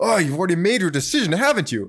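frustrated outburst. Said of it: "he's just so frustrated".

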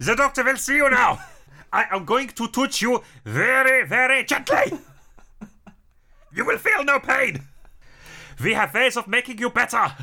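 very high German-accented doctor bedside voice. Joking about a possessing spirit doctor, voicing Doctor Fritz: put-on German accent. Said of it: "so you don't have to put on a German accent".

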